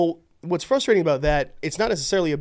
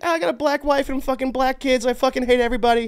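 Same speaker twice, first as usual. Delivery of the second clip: goblin voice pushed up very high in pitch; 10 semitones higher than usual. Imitating Bill Burr while arguing about his looks: Bill Burr voice. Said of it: "Have you heard his voice?".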